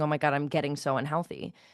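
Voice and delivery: dramatic, played-up fretting freak-out, low pitch. Speaker imagines how one of their clients would react, mock freaking out. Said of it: "I'd be freaking out going".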